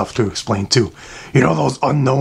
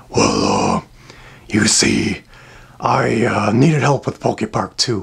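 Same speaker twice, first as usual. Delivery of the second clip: lower, evil villain voice; 4 semitones lower than usual. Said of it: "evil voice guy".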